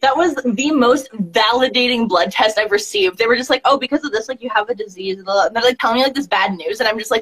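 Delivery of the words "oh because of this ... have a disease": ordinary talk, nothing marked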